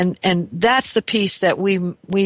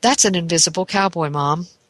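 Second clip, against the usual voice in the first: very proud, show-and-tell style delivery. Mother retelling her young daughter's words about a painting, imitating a proud child. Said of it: "very proudly says".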